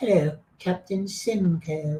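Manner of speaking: squeaky, thin, really high-pitched voice. Retelling how an actor on the show Turn delivered a line, in a really high-pitched voice. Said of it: "he used a really high pitch of".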